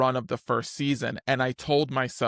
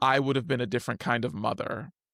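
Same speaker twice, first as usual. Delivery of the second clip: usual speaking voice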